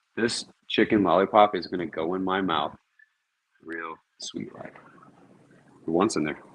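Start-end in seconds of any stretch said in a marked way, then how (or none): none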